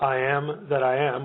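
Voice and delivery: plain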